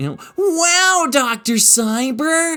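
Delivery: very high, swooping, sing-song put-on character voice. Offering to do the Tim voice for listeners: Tim voice. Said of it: "I can do the Tim voice".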